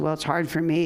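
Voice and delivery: ordinary delivery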